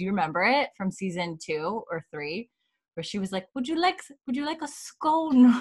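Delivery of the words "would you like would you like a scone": heavy, thick Scottish brogue, pitched up. Retelling a scene, quoting Fiona: thick Scottish accent imitating Fiona. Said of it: "Fiona's Scottish accent is so thick too".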